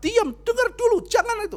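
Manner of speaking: very high, loud, harsh barked yelling. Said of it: "Saya bentak-bentak".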